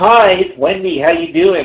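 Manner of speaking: slow, robotic automated phone-system voice. Retelling a call from a robot voice prompt: imitating a robot caller. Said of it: "And it's like the robot".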